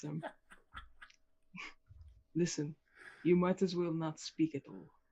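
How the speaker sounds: whispering. Addressing someone who is stumbling over his own name, whispering. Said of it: "I'm whispering this".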